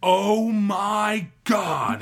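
acted high, angry exclamation, "my" drawn out. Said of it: "in anger".

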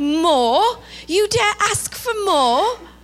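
put-on English accent. Acting out the man answering Oliver's request for more, in an English accent. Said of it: "Sounds better with my English accent".

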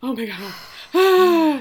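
mock breathless whisper. Retelling a scene where a character breathes hard: imitating breathless whispering. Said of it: "she starts breathing hard and whispering".

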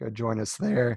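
voice cracking. Podcast host thanking listeners and listing social media, voice cracking. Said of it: "Sounded like I'm mid-puberty right there with my voice crack".

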